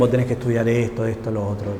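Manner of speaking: usual speaking voice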